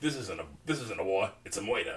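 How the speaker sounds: mock angry, mad-sounding voice. Retelling how Orion protested the massacre: imitating angry Orion. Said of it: "and he's mad about it".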